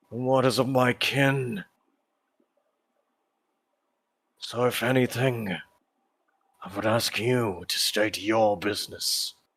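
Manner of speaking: loud, crackling, crackly voice. Narrator voices a robed figure calling out to the players: crackling voice. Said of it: "this crackling voice kind of again reaches out".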